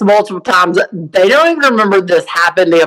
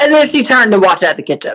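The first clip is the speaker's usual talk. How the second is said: ordinary delivery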